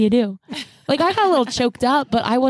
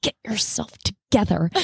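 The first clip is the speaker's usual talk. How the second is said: hushed whisper under the breath; 3 semitones lower, 4 dB quieter than usual. Retelling what was said to someone in a movie theater: retelling a whisper. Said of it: "I whispered".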